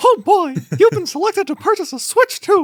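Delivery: very high squeaky cartoon voice. Retelling an email from Nintendo, in a Mickey Mouse voice. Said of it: "That's a pretty good impression".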